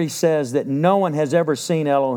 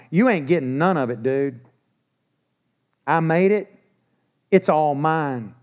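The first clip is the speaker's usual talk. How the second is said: put-on old Texan way of talking. Voicing Him telling the devil off in the great battle, in old Texan slang. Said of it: "I'm going to say it in my old Texan slang".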